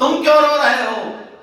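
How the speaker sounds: high, loud, indignant tone.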